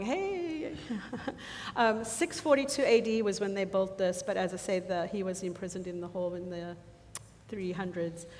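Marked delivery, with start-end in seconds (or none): 0.0-0.7 high-pitched mock shout. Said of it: "Mark was shouting".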